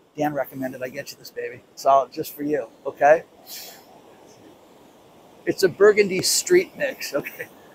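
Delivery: low, hushed, stifling laughter. A host reads a listener's line aloud to Dan: trying not to laugh. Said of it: "I got to do this without laughing".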